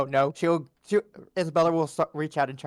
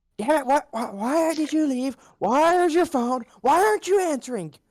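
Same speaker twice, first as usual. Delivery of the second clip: very high-pitched, furious, angry shouting; 12 semitones higher than usual. Player voicing her character marching straight up to him, angry yelling. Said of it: "start yelling at him".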